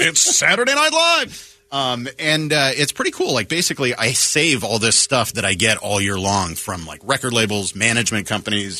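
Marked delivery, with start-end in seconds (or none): 0.0-1.5 high-pitched calling voice. Imitating the Saturday Night Live announcer: Don Pardo voice. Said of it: "I wanted to be Don Pardo".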